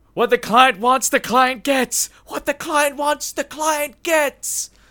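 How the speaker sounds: shrill, very high, repeated shrieking scream. Narrating a man flapping over to both listeners; screaming. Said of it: "and he's just screaming".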